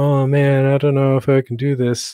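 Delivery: slow, put-on sorrowful voice. Showing how someone might perform a sad line: sad line delivery. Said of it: "Sad sounds like".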